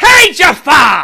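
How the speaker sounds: very loud, high-pitched yell. Doing an impression that has to be yelled: Gilbert Gottfried impression, yelled. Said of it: "It's going to be loud, too, by the way. Because you have to yell it. It's a Gilbert Gottfried impression".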